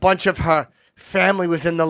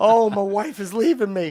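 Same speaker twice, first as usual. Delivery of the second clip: blubbering, whiny, tearful crying voice. Retelling what a therapist said after he starts crying: imitating someone crying. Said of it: "He starts crying".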